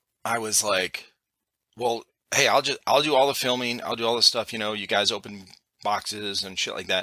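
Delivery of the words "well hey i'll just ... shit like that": ordinary talk, nothing marked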